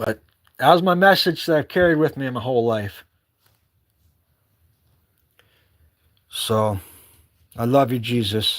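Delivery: choked-up voice, throat catching, thick with emotion. Finishing a story about a message carried all life: choked up. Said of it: "Choked up".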